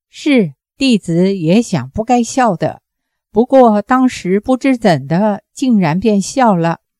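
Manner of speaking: ordinary delivery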